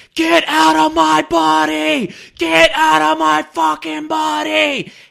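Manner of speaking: piercing, very loud, high, raw, rough screaming. Retelling how they scream at the demons they feel inside them, reenacting their own screaming. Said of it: "And I'm literally screaming".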